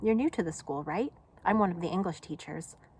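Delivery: ordinary delivery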